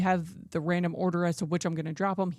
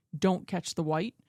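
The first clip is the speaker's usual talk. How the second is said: mock very stern voice. Speaker recalling the instruction given before each test: retelling a very stern command. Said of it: "Say it in a very, very stern voice".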